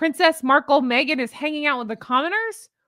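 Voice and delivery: ordinary talk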